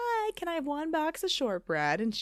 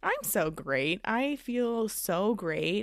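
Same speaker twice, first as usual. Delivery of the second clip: sarcastic tone, meaning the opposite; 4 semitones lower than usual. Answering how are you after a terrible week: sarcastic. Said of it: "can you hear my sarcasm?".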